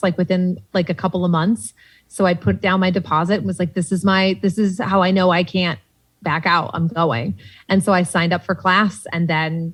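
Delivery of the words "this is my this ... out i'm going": ordinary delivery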